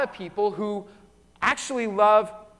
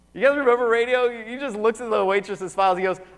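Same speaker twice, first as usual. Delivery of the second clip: normal talking voice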